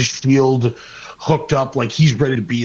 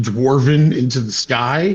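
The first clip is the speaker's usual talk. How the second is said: normal talking voice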